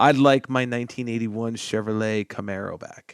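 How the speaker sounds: usual speaking voice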